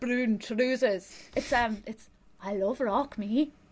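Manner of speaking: attempted Welsh accent. Goofing around with another speaker, attempting Ian's Welsh accent. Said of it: "a bit of, like, Ian's accent".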